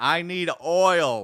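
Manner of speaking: mock screaming car voice, high-pitched and loud. Telling how their car started screaming at them at the Hoover Dam, imitating a screaming car. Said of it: "the car starts screaming at me".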